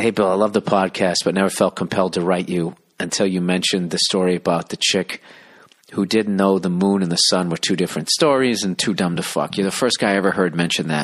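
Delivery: ordinary delivery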